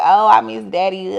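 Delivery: mock drunken sobbing. Retelling a late-night phone call to mom, imitating own drunk crying. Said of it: "I'm on the phone with her and I'm, like, crying".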